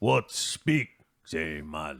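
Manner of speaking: put-on low orc chieftain voice. Narrating a game, speaking as the orc chieftain: orc chieftain voice. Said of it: "the orc chieftain goes".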